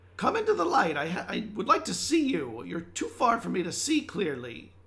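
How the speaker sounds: high, loud, squeaky creature voice. In a game, a speaker voices a talking fire addressing another player's character, squeaky voice. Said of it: "it's more of a squeaky voice".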